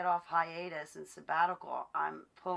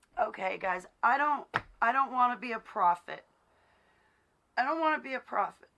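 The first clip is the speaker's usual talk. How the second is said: high, loud voice on the edge of tears; 6 semitones higher, 6 dB louder than usual. Speaking to viewers after an apology, on the verge of tears. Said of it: "I'm gonna start crying right now".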